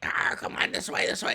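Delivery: tiny, chattering goblin voice. Voicing goblins heard through a closed kitchen door: little goblin voices. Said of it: "other little goblin voices".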